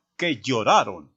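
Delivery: firm, decisive, authoritative, commanding tone. Spanish voice exercise, repeating a short phrase: authoritative, commanding. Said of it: "dígalo mostrando autoridad".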